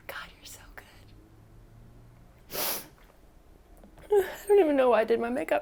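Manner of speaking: tearful, overcome, choked-up crying voice. Speaker on camera, crying because she almost gave up, speaks crying. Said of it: "I'm crying because I almost gave up".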